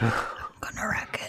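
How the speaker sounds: mock whispering. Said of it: "He just whispers".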